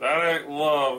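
ordinary delivery

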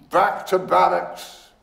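severe, stern, rough, no-nonsense tone. A man covers the bowl and gives an order, sternly. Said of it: "he said sternly".

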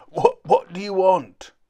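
very loud drawn-out shout broken by coughs. A voice from inside a cloud of smoke answers a visitor at the house, coughing while speaking. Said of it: "Coughed a voice from inside the cloud".

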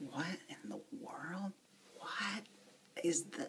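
soft, confused whisper.

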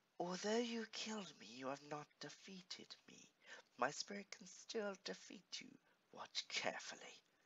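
relaxed, high voice. Narrator reading the Snow Witch's words from the globe, chilling Snow Witch voice. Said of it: "In a chilling voice".

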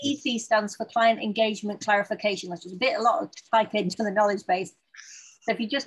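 fast, rushed, rattled-off rapid speech. Explaining how to search the knowledge base with a short code, speaking fast. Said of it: "You're speaking so fast".

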